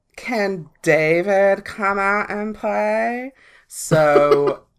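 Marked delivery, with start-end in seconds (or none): 0.2-3.4 put-on American Valley Girl accent, playfully drawn out. Retelling what she and her friends said knocking on a boy's door: Valley Girl accent. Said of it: "How'd you turn into Valley Girls that quick?".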